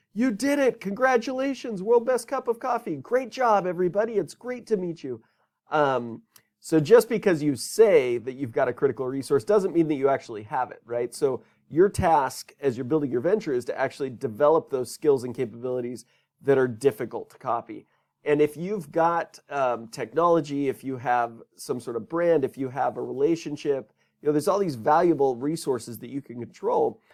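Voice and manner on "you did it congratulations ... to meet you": very high, mild mock yell of joy. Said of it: "He starts screaming".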